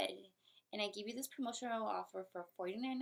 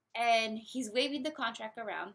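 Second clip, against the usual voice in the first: usual speaking voice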